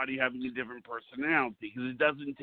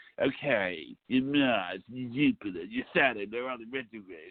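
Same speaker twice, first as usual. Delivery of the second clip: put-on New York accent; 2 semitones lower than usual. The speaker shows what Jill Dane sounds like, Jill Dane impression with accent. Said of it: "she's got the accent now".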